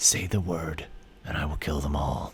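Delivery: half-whispered, hushed, close to the ear. A game character sends a half-whisper into another's ear, half-whispering. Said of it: "He whispers to Darmida in your ear".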